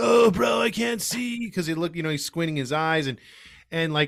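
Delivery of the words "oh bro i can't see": very slow, high, mocking put-on drawl. Retelling mocking a squinting catcher with a Spicoli voice. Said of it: "started giving him the Spicoli voice".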